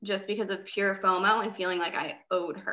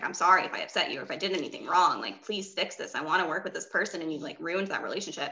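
mock sobbing, bawling, tearful voice; 3 semitones lower than usual. Retelling a phone call to a cold coach: imitating own past bawling plea. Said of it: "bawling my eyes out on the phone".

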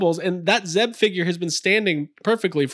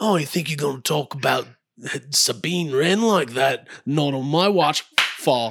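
almost Australian accent; 3 semitones lower than usual. Showing Star Wars figures, the speaker attempts a Zeb impression. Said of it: "I don't know if I could muster up a good Zeb impression".

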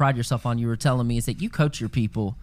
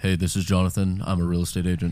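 put-on deeper, older-sounding voice, much lower; 6 semitones lower than usual. Retelling how he calls homeowners, the speaker uses a deepened older-sounding voice. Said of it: "I still do that".

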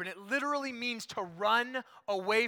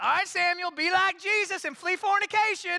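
put-on very high, loud, hollered Alabama accent; 10 semitones higher, 7 dB louder than usual. Speaker imitates his mom calling to him in front of friends, loud Alabama accent. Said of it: "as loud as she possibly could in her Alabama accent".

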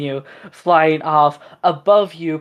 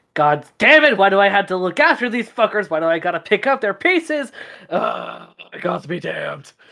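aggravated, annoyed dragon voice; 4 semitones higher than usual. Narrating a game, voicing the dragon flying overhead the party, aggravated. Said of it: "the words seemed more a little aggravated".

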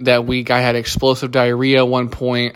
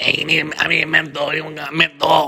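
put-on desperate crazy person voice, higher; 4 semitones higher than usual. Retelling a joke made outside in the cold: imitating a crazy person begging for a menthol. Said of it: "acting like a crazy person that needs a menthol".

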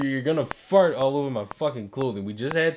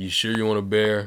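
put-on bored, unenthusiastic voice, lower pitched; 4 semitones lower than usual. Acting out a Build-A-Bear worker with no enthusiasm: mock unenthusiastic worker. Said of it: "ain't no enthusiasm".

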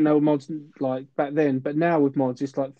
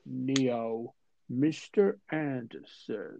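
very slow, weighty, hushed, measured drawl; 2 semitones lower, 8 dB quieter than usual. Recalling the film's cast, the speaker imitates Morpheus talking really slow. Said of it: "talk really slow, like".

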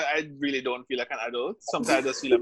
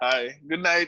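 ordinary talk, nothing marked

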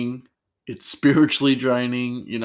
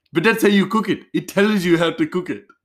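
high, loud, badly imitated Indian accent. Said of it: "my, um, horrible Indian accent".

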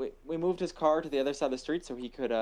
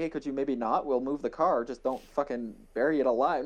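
plain

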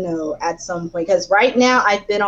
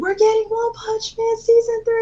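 acted, very high, shrill yell; 14 semitones higher than usual. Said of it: "he called and yelled".

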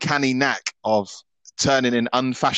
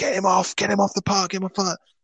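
mock high-pitched screaming, repeated over and over; 8 semitones higher than usual. Retelling a fan behind him at a match: imitating a fan screaming. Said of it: "he's screaming, like".

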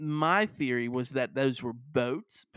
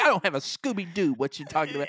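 put-on angry childlike voice. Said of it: "Why you sound so angry, but you also sound like an elementary child".

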